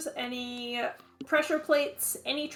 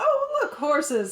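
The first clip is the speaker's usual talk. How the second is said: quick, sudden, blurted exclamation; 4 dB louder than usual. Narrating the scene, the speaker voices Phelan, standing behind the player, exclaiming. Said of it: "just sort of exclaims".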